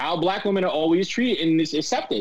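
ordinary talk

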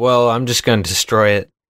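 plain

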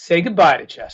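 flat deadpan delivery. Retelling a mom's line from a movie as she holds up a rabbit, deadpan. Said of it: "the way she just deadpans it".

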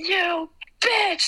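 high, all-out yell at the top of the lungs. Retelling shouting a line on stage while throwing candy: retelling a yell as loud as possible. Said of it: "as loud as I can".

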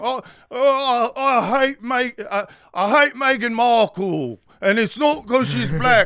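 loud, high, pompous voice. Describing Piers Morgan to another speaker, bad Piers Morgan impression. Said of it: "I can't do the accent".

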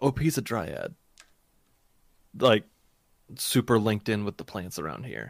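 voice dropped a little. Speaking in character in a fantasy roleplay scene, voice dropped a little. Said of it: "I'm gonna drop my voice a little bit".

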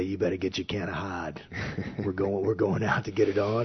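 thick put-on New Hampshire accent. Retelling what he'd say to the platoon, in a thick New Hampshire accent. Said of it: "in his thick New Hampshire accent".

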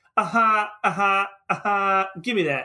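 very slow, every syllable drawn out. Describing a favourite film scene, imitating Tom Hanks as Woody. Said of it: "you hear Tom Hanks being like".

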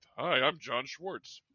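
slow, drawn-out, deliberate, plain delivery. Showing a joke impression of a guy grown up with: John Schwartz impression. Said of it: "this is my impression of John Schwartz".

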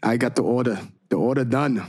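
bad, put-on, fake London accent. Thanking the group for sending in the order: bad put-on accent. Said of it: "your accent really does suck".

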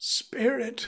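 voice breaking, spoken brokenly. Scrooge speaks to the Spirit, in a broken voice. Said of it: "said Scrooge in a broken voice".

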